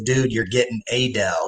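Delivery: put-on old TV ad pitchman delivery. Quoting an old computer commercial line: imitating the Dell commercial guy. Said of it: "like a computer".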